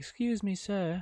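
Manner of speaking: very high-pitched, put-on British accent. Imagining women in a store asking him for help, in a british accent. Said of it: "I don't know why they're British".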